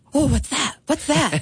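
put-on tiny, high three-year-old's voice. Retelling Juliet's reaction to flickering lights: Juliet's little 3-year-old voice. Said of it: "in her little 3-year-old voice".

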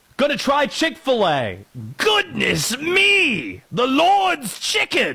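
high, slow, bad put-on Australian or English accent. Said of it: "I can't do any other accent".

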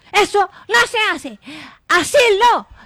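loud, high scolding tone.

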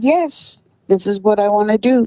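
small, robotic voice. Retelling how a woman answered when asked several times if she was sure, little robot voice. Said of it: "in her little robot voice".

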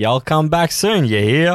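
slight put-on southern accent. A host reads out a listener's texted message, southern twang. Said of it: "I just assume there was a bit of a southern twang to that".

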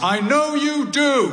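very high, loud call-out. Retelling the dad calling out as the speaker leaves the hospital ward; loud voice. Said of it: "in a loud voice".

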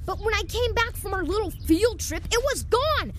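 agitated, upset outburst. Pressed to own up, a character answers the accuser: worked up. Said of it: "Calm down, Barrett".

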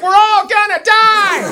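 put-on panicked child's scream, very high, slow wail.

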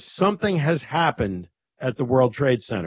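ordinary talk

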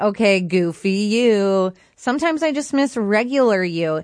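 plain

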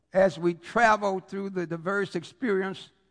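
ordinary delivery

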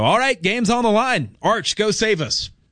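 high, hopeful, pleading call. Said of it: "he's not necessarily the guy where I go".

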